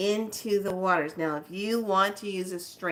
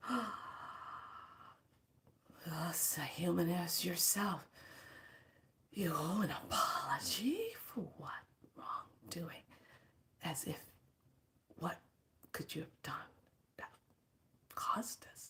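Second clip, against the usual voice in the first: put-on hushed, breathy, whispered old dragon voice; 13 dB quieter than usual. Retelling what the grandfather dragon said: imitating the grandfather dragon's speech. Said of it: "This is how he's talking to me".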